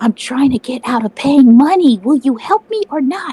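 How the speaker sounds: whispered aside. Asking another character for help in secret during a scene: whispering. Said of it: "I'm gonna whisper".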